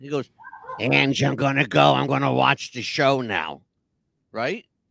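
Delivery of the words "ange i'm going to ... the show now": rough, creaky, casual voice. Retelling what Jeff last said to the speaker: imitating Jeff's voice. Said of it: "to mimic his voice".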